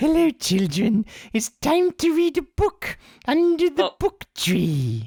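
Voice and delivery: put-on very high, squeaky, creepy kids' show puppet voice. Imitating a worm puppet from a kids' show: Bookworm puppet voice. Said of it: "And he talked like this".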